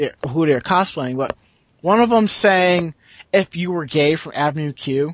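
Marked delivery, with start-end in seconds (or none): none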